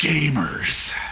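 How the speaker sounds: put-on disgust on 'gamers'. Correcting the other speaker, he mimics someone saying the word: mock-disgusted 'gamers'. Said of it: "he sounded so disgusted every time he said the word gamer".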